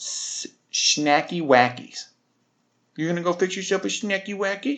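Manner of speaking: put-on high, cutesy, babyish baby talk. Retelling how a woman talked about getting a snack, imitating baby talk. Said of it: "She talks like a baby".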